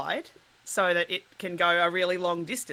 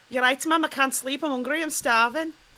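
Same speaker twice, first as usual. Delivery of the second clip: put-on small child's pitched-up Liverpool Scouse voice; 7 semitones higher than usual. Speaker demonstrating a cue phrase he uses to get into an accent, scouse liverpool accent. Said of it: "so to do Scouse, like Liverpool".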